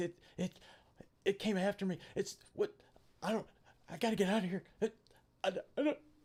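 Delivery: mock, very high, gasping, broken terrified stutter. Describing a terrified man talking gibberish: acting out terrified stuttering. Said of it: "literally just like gasping, stuttering".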